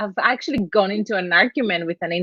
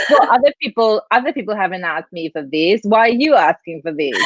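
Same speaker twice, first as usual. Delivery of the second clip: ordinary talk, nothing marked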